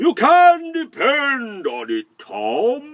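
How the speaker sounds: beaming sunny voice, very loud, very slow, high. Storyteller voicing the sun speaking to Tom, very sunny voice. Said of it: "in a very sunny voice".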